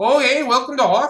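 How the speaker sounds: put-on Canadian accent, loud and high. Voicing a furry creature greeting the travelers: Canadian accent. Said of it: "he's the fucking Canadian".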